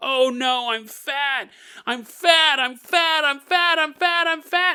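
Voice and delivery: high, loud, drawn-out, frantic panicked screaming. Retelling a video where she grabs her stomach: imitating someone screaming in a panic. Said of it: "she starts kinda, like, freaking out".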